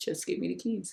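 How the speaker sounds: quiet, steady, stern, firm half-whisper. Retelling a voice heard at night: imitating a stern, calm half-whisper. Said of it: "very sternly and very calmly, as a whisper".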